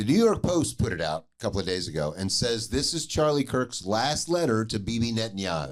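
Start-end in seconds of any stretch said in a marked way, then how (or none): none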